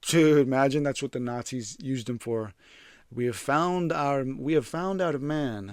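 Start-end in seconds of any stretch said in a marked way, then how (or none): 3.1-5.7 amateur put-on German accent attempt. Joking about what the Nazis would say, the speaker tries a German accent. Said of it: "I'm trying to do a German accent".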